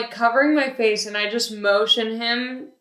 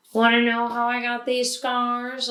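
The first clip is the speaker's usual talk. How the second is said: ordinary talk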